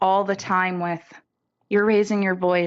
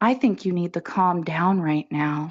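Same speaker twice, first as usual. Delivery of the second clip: put-on calm, quiet voice; 2 semitones lower than usual. Retelling what a son says during an argument: imitating a son speaking quietly. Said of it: "He'll be real quiet and he'll say".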